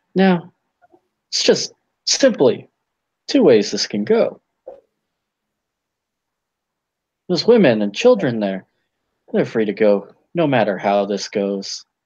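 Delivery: low, swooping, intimidating and menacing character voice. Voicing a character who threatens a captive with a dagger: intimidating threat in character. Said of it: "intimidate the hell out of this guy".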